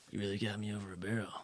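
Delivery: soft, low, hushed half-whisper, no voice. Retelling what a man said as he quickly gave in, half-whispering. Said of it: "in a whispering voice".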